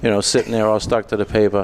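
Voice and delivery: ordinary talk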